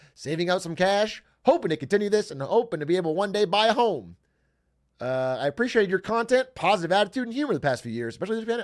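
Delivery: nerdy put-on reading voice. Reading a fan's message aloud, in a nerdy Flanders-y voice. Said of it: "I'm giving you like kind of a nerdy".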